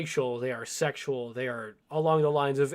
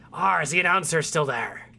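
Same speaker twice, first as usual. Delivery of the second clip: loud California surfer and pirate voice; 3 semitones higher, 5 dB louder than usual. Voicing a dwarven lady asking about the announcer: California surfer and pirate voice. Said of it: "weirdest delivery of, like, California surfer and, like, uh, Central East Coast pirate".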